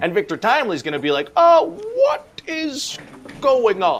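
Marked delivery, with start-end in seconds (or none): 1.4-4.0 very high-pitched, very slow, swooping science-nerd voice. Speaker recaps a show to a friend, acting out a character; Victor Timely voice. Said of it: "what's that voice you're doing?".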